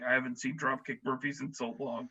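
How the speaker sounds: deep, husky, low deep-set voice. Repeating what someone just said: imitating Nate's deep husky voice. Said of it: "in a really deep, husky voice".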